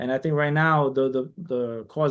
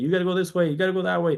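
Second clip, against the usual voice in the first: mock, mild, half-yelled voice; 4 semitones higher than usual. Retelling directing people during the parade: imitating own yelling. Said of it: "I was yelling at people".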